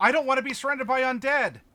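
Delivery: really loud, high blurted-out cry. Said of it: "Like, really loud".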